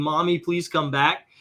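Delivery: plain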